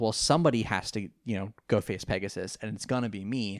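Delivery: ordinary talk, nothing marked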